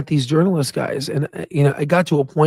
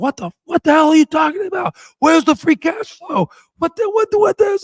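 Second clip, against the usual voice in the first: play-acted, shrill, very high, climbing yelling; 14 semitones higher than usual. Speaker retells yelling at the iPad screen while his girl watched: retelling a yell. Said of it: "I was like yelling at the freaking screen".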